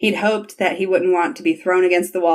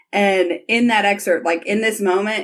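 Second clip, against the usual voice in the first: ordinary delivery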